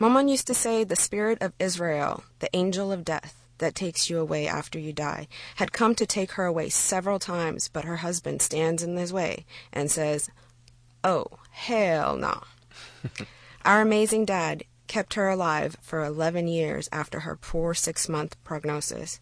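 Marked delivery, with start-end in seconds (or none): 11.0-12.4 drawling, put-on Texan accent. Translating what their father told the angel of death, in a texas drawl. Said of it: "I'm only translating with a Texas drawl".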